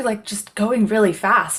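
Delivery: ordinary delivery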